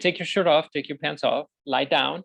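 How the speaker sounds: usual speaking voice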